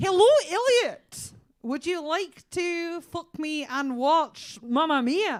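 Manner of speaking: put-on Scottish accent. Asked if she can do a scottish accent, the speaker addresses elliot, scottish accent. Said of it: "Can you do a Scottish accent?".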